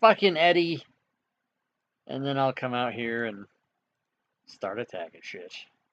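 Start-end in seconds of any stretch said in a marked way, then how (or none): 0.0-0.8 high, shouted in-character yell. Voicing a character who yells at his cousin Eddie: in-character yell. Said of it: "I yell".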